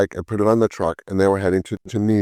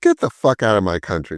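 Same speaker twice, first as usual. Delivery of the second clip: mock angry, fed-up, dismissive tone. Retelling what the man said after getting vomit on him: imitating a pissed-off man. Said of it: "the guy was really pissed".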